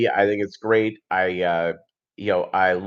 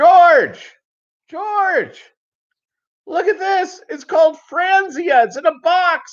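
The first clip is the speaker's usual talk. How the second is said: mock very high yell projected over a distance. Speaker retells calling across the place to an uncle, retelling a yell. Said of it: "I'm yelling across the place".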